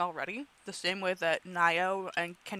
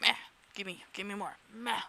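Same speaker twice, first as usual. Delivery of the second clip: words half-meowed like a cat; 6 dB quieter than usual. Retelling what the cat says after the pats stop: imitating a meowing cat. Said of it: "he meows at me".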